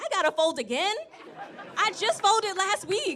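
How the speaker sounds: whiny irritated complaining tone, very high and loud. Retelling own complaint about folding new clean clothes: imitating own annoyed complaint. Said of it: "I got the nerve to be mad".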